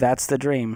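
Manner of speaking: put-on flat, emotionless, deadpan voice. Retelling what the bank clerk said about paying off the mortgage: imitating an emotionless bank clerk. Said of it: "No emotion on this lady's face".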